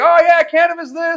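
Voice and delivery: loud, very high, excited shout. Retelling talking openly about cannabis: imitating own shouting. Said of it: "Over here shouting about it".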